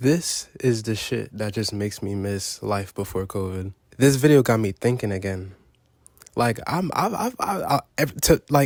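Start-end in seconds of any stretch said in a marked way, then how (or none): 6.4-8.7 stuttering, tripping over repeated words and false starts. A video maker talking to viewers, getting stuck mid-sentence: stuttering. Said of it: "I'm stuttering".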